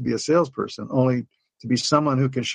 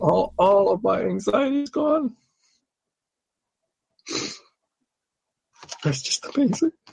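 overcome with emotion, voice much higher-pitched; 7 semitones higher than usual. Recounting a woman's wellness session and what she said, getting emotional. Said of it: "I'm sorry about this stuff".

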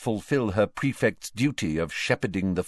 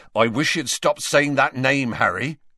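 gently scolding, disapproving, reproachful, slightly higher voice; 5 semitones higher, 4 dB louder than usual. A voice from behind chides someone for saying that name, reproachful. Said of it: "said a reproachful voice behind them".

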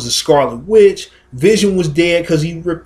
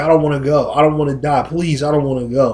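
mock pleading, begging tone. Recounting the moment on Titan, retelling Spider-Man begging. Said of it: "Spider Man was begging like".

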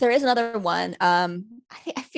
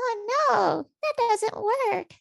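very high, tiny, weird whimpering little voice. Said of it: "little voice that's like".

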